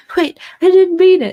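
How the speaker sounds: sudden high, loud, manic pleading tone.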